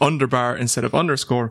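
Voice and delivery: plain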